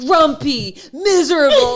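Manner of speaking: very loud, high-pitched screaming of many voices at once. Retelling family members shouting out clues in a card game: imitating people screaming. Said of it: "everyone started screaming, like".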